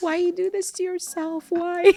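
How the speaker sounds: put-on crying, tearful voice. Imitating a mother begging not to go to a protest: imitating a crying mom. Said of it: "she's always, like, crying over something".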